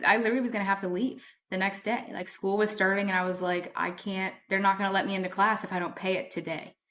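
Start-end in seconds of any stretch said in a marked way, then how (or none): none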